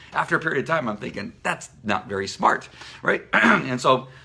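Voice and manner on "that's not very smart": normal talking voice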